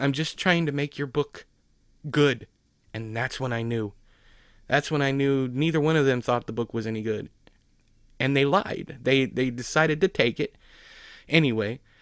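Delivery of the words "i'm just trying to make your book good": upset voice on the verge of tears. Retelling what she said after the speaker upset her: imitating a teary voice. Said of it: "kind of in a teary voice".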